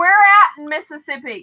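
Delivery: loud yelling. Asking another speaker where in mississippi they are from: loud yelling. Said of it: "You don't have to yell".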